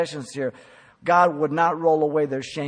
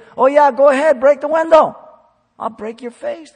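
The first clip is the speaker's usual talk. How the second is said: loud, high, faux-encouraging sarcastic tone; 11 semitones higher, 10 dB louder than usual. Acting out a parent telling a kid to break the window: sarcastic parent. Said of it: "It's sarcasm".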